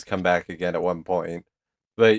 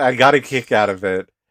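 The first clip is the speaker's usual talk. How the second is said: ordinary talk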